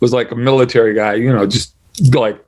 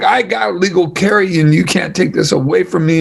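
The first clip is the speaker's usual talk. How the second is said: put-on pitched-up, rough, angry, defiant drunk shout; 6 semitones higher than usual. Retelling an angry drunk guy demanding his gun back: imitating someone yelling. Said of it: "The guy's yelling at him like".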